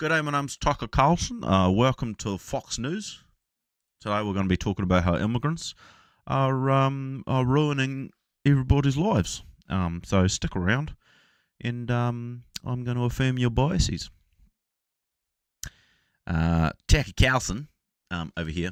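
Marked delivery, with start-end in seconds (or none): 0.0-14.1 put-on New Zealand accent, pitched up. Speaker demonstrates a Kiwi accent: Tucker Carlson in Kiwi accent. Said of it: "a Kiwi accent".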